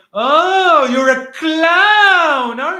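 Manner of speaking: very high, very loud, very slow sarcastic delivery. Retelling what a man said when asked about the protocol, imitating sarcastic mockery. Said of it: "like sarcastically".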